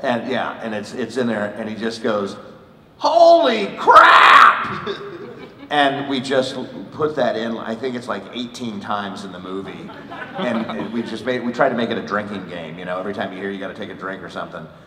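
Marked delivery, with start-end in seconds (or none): 3.0-4.9 very high-pitched, slow, loud scream. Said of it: "like the Wilhelm scream".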